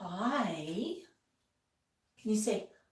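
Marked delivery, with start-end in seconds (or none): 0.0-0.9 very soft, hushed, drawn-out delivery. Showing one of his favorite quiet greetings, very soft hi. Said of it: "do this really soft".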